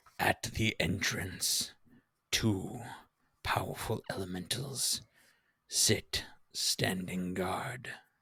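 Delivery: low gravelly voice. Narrating a story, voicing a figure who pauses and then speaks, in a low, gravelly voice. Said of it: "in this low, gravelly voice".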